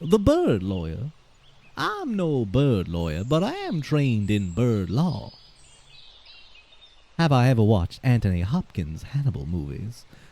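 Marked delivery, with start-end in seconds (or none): 0.0-5.4 sing-song, cartoonish put-on Southern drawl. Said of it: "my little old mind goes to the Futurama lawyer".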